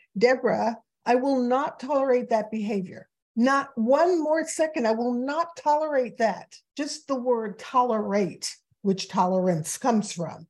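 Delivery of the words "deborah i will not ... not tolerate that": put-on furious, angry voice. Speaker recalls her mother's voice whenever she hears a certain word: mock-angry mother. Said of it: "I hear my mother's voice and she's angry".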